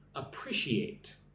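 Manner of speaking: appreciate with stress on second syllable -pre-. On a live stream, the speaker shows how to say the word, stressing appreciate's second syllable. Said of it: "Put the emphasis on the second syllable".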